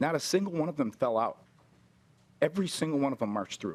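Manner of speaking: choked up, voice catching with emotion. Describing soldiers charging to their deaths, choked up. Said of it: "I'm sorry when I get choked up about this".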